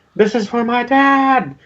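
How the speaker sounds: put-on shrill, very high, shouted child's battle cry. Game master voicing an orc child attacking with a sword, shouting a battle cry. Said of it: "he shouts out in Orcus".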